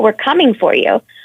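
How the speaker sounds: ordinary talk, nothing marked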